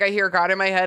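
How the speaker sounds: ordinary talk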